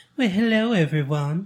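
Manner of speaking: sinister, creepy, drawling southern gentleman voice. Asked to demonstrate, imitating a man they described: imitating creepy southern drawl. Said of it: "Let us hear it".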